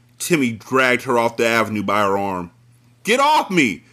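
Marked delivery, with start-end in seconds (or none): 3.1-3.8 high, piercing scream. A girl is dragged along by her arm by a man; screaming. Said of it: "Tracy screamed".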